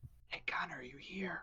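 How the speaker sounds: very soft, hushed, high-pitched whisper. Calling out quietly to an unseen party member: whispered voice. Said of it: "in a whispered voice".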